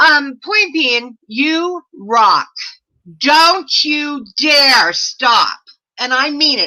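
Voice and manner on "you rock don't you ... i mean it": slow, emphatic yell, hitting each word hard. Urging the other speaker never to stop, yelling. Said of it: "I'm yelling at you".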